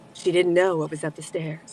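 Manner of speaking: mystery narration voice. Answering a suggestion to narrate true crime: true crime narrator voice. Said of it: "I feel like she can narrate that".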